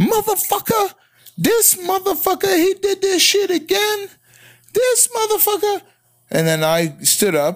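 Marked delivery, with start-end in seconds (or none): 0.0-5.8 very high, shrill screaming tirade with cursing. Retelling a woman arriving in the quiet emergency department: imitating a screaming woman. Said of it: "you hear a screaming woman coming in".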